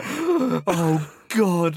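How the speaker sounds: high, loud, mortified, embarrassed outburst. Retelling a group's reaction on realizing their rudeness: retelling embarrassed reaction. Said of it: "really embarrassed".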